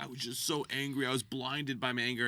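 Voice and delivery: play-acted weepy, sorry-for-himself, tearful crying voice. Retelling a man's apology after a quarrel: imitating someone crying. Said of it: "he's crying and apologizing".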